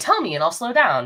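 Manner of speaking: plain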